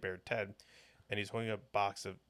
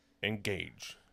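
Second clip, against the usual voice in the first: word tossed out casually, half-trying. Naming a favourite narrator voice, then trying a Patrick Stewart voice. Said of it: "trying to do your voice".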